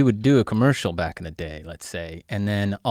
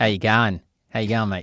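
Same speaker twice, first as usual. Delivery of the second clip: bad, fake Australian accent. Greeting the guest before her show reel: bad Australian accent. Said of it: "I love doing the bad Australian accent".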